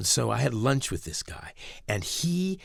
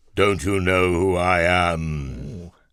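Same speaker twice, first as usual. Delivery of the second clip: deep, very slow villain voice, slightly RP; 4 semitones lower, 7 dB louder than usual. Telling a story where Satan looks down at an old man: Satan voice. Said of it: "I'm going to do my Satan voice here".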